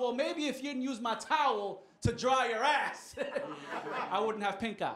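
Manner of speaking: triumphant, laughing through it. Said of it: "I was like".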